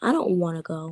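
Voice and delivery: plain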